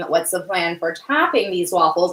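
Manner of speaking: ordinary delivery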